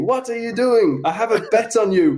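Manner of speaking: put-on Spanish accent, very high pitch. Speaker retells what a man said to him, in a put-on Spanish accent. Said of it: "in this Spanish accent has gone to me".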